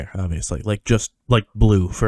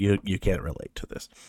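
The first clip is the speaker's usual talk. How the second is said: plain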